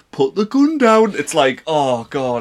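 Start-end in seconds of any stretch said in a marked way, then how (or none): 0.2-1.2 exaggerated Geordie accent, very high and loud. Showing how other people do their local accent: exaggerated Geordie accent. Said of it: "an exaggerated version of our accent".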